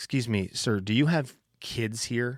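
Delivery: put-on shaky, trembling voice. Retelling a mom approaching him at the Children's Museum, imitating a shaky voice. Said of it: "with a shaky voice".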